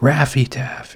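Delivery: loud, sudden blurted yell. Blurting out a name mid-ramble about old subscriptions, yelling. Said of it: "Sorry to yell".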